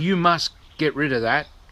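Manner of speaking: ordinary talk, nothing marked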